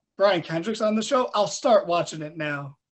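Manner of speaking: ordinary delivery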